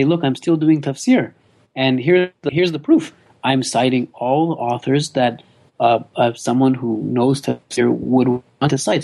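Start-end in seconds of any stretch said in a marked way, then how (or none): none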